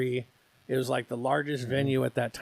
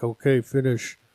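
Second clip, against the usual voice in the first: put-on loud delivery in an Austrian accent; 6 dB louder than usual. Retelling a wrestler's words at a match's end: Andre the Giant Austrian accent. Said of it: "in his Austrian accent".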